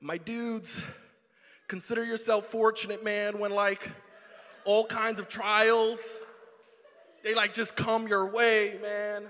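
very loud, booming, laid-back surfer dude voice. Retelling a written passage as a surfer would, in a laid-back surfer voice. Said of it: "I'm tempted to read the whole thing in that voice".

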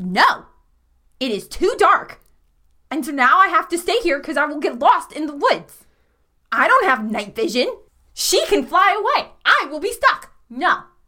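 irritated, getting cross, insistent and digging in. Voicing a character who refuses to leave the dark woods: irritated. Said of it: "now she's getting a little irritated".

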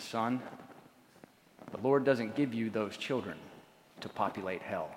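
deep, hushed voice. Retelling what a man told him as his first child was coming, in a deep voice. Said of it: "he looked at me with that deep voice".

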